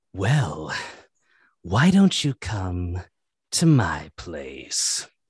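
low, swooping, oily, smarmy evil villain voice. Improvising a scene with others, playing a smarmy evil villain. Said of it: "your most evil, smarmy villain".

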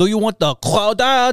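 fake German accent, pitched way up high. Joking about louisiana cooking, offering a crawdad: put-on accent that sounded german. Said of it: "that sounded like a German".

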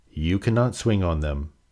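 ordinary delivery

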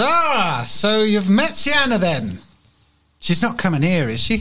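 laughing softly while speaking. The mistress answers travelers asking for lodgings, amused, laughing to herself. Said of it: "she laughs to herself and says".

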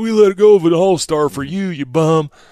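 put-on Hoosier accent. Speaker voices the home crowd telling him he sucks, in a Hoosier accent. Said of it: "Is that your Indian accent?".

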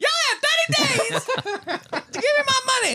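shrill voice, very high and loud. Doing a villain demanding money back: Chris Tucker voice. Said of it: "Chris Tucker as Squiggy".

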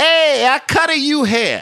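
very high pitch, slow-rolling and stretched out. Imitating a barber greeting customers: Chico Marx voice. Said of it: "Like he was Chico Marx".

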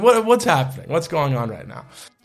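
mock panicked, alarmed voice. Retelling a surprise phone call: retelling own panicked reaction. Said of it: "my heart just drops".

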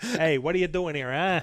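put-on New York accent. Imagining how it would talk to someone, put-on New York accent. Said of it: "it uses a New York accent".

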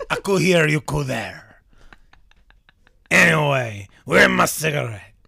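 put-on pigeon voice with French accent. On a podcast, a host shows off animal sounds in a French pigeon voice. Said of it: "But we're not in France".

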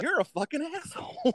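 put-on, shrill, very high, shouted outburst. Speaker recounts what he said to someone, retelling a yell. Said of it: "I'm yelling at this oh".

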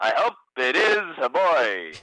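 very slow, drawn-out, deliberate dramatic delivery. Imitating how a man in a movie delivers his line: imitating a movie character's delivery. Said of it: "That's his delivery. That's how he says it".

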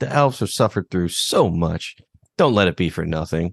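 plain

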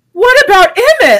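sudden, high, loud freaked-out outburst. Retelling your own past reaction while freaking out, retelling an exclamation. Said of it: "And then I exclaimed".

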